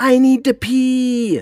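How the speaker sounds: put-on shrill, very high, very loud toddler shriek. Parent retelling a church service, mimicking Hazel screaming during the quiet before prayers. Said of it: "you just hear Hazel start screaming".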